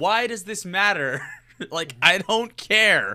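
loud, high-pitched, drawn-out yell. Retelling yelling at a message on the movie screen: retelling a yell. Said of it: "I yelled at the screen about this".

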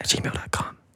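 hushed whisper. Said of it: "I'm gonna whisper the rest of the episode".

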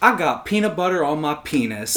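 ordinary talk, nothing marked

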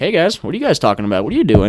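deer character voice. Retelling a deer that pokes its head up, voicing the deer talking. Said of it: "this deer just pokes its head up, and he's just kinda like".

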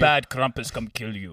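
fake Russian accent. Joking about Krampus on the podcast, voicing the Russians: bad Russian accent. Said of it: "doing a Russian accent".

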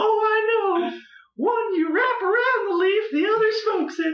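very high, squeaky put-on joke voice.

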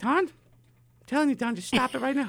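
acted, very high, rapid, furious father voice. Speaker imitates his dad scolding him when mad, imitating dad's angry high voice. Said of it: "his octaves go higher".

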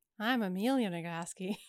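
heavily sarcastic, overdone tone. Introducing oneself at the end of the podcast episode: too sarcastic. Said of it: "That was too sarcastic".

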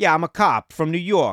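put-on Italian New Yorker accent, laid on thick. Acting out an actor trying really hard as his character introduces himself, in a put-on Italian New Yorker voice. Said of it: "he thinks he's playing an Italian New Yorker".

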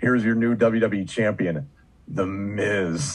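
acted glum announcer voice, slow and joyless. Retelling the announcement of a new champion: recreating a call with malaise. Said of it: "put some malaise in my, my voice".

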